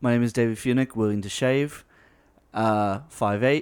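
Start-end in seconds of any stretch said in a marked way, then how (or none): 0.0-2.5 put-on British accent. Showing how he introduces himself at casting calls: put-on British accent. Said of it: "So I'll go and I'll say".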